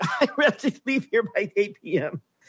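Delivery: high, hysterical, desperate laughter through the words. Speaker retelling someone's desperate laughter, imitating hysterical laughter. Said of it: "you could kind of sometimes hear that hysteria".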